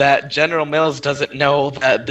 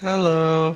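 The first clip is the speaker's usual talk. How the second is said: sleepy, drowsy, half-awake, dozy voice; 2 semitones higher, 4 dB quieter than usual. Answering a big introduction with a short greeting: sleepy voice. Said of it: "He's a very sleepy, reanimated person".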